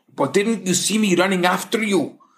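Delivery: protesting, objecting tone. The officer, who ran after the man he stopped, protesting. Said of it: "The officer protests".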